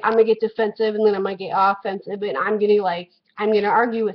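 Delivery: plain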